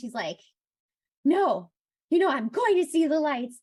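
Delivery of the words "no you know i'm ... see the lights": put-on very loud, angry, pitched-up outburst. Retelling a scene where a character argues with herself: imitating an angry character. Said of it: "And she's angry".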